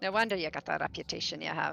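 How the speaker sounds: quiet private aside, muttered under the breath. Narrator voicing a woman's aside to the group, muttered under her breath. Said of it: "quite under her breath".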